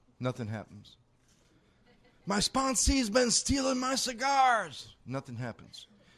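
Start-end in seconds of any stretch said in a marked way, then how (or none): 2.3-4.9 very high-pitched screaming. Telling a joke where the sponsor screams out an accusation: imitating a scream. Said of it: "He screams out".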